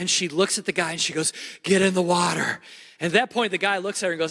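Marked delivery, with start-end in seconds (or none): 1.6-2.6 mock breathless panting, much slower. Speaker retells a woman running up exhausted to people on the beach, imitating being out of breath. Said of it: "She's out of breath".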